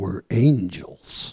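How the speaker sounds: strong, deep, powerful preacher's voice. Speaker retells a group member answering a girl, in a deep powerful minister's voice. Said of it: "with his deep, powerful minister's voice".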